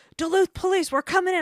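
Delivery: shrill, very loud, high police-style shout. Retelling a house visit, imitating a man yelling as he beats on the door. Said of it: "he beats on the door and yells".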